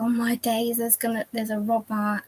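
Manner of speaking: play-acted, sudden panicked, startled blurt. Retelling hearing glass shatter at home: imitating own panicked voice. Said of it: "my voice was like".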